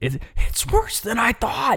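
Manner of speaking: very high, slow, loud whisper cracking from strain. Retelling what a man said while looking at his hair, imitating a cracking loud whisper. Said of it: "his voice is like cracking as he's whispering because it's so loud".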